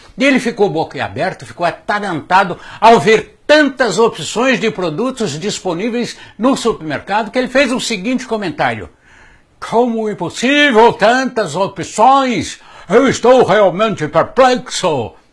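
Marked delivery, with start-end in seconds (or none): 9.6-15.1 put-on Russian accent, spoken slowly. Retelling a president's amazed remark in a supermarket: Boris Yeltsin voice with Russian accent. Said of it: "Eu não sei se é assim o sotaque russo".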